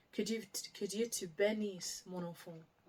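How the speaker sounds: ordinary delivery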